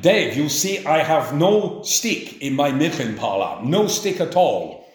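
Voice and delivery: put-on English spoken with a German accent. Retelling what Max would say to him, Dave: Max's German accent. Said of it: "he would say to me in a German accent".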